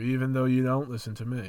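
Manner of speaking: ordinary delivery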